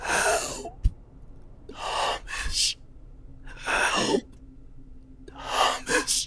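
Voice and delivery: drawn-out, very slow, wounded-sounding voice. A horror figure calls for Thomas through a crack in its neck: voice from a torn neck. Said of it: "I'm still gonna do a voice".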